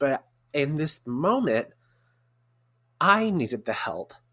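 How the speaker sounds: tearful, emotional voice, close to tears. Telling of a moment of needing help, the speaker speaks teary-eyed. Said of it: "I'm a little teary eyed".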